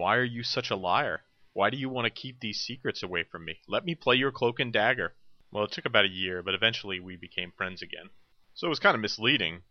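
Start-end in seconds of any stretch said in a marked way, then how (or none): 0.0-5.1 acted-out accusing outburst, mild and insistent. Retelling yelling at a friend over a missing game: imitating own past yelling. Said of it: "And I kept yelling at him".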